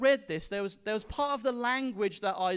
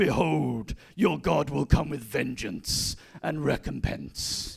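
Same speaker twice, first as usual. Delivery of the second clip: very low, rough, gruff rasping voice; 7 semitones lower, 3 dB louder than usual. Reading a Bible verse as if Batman says it, gruff Batman voice. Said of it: "Batman suddenly appears in his very gruff voice and he says".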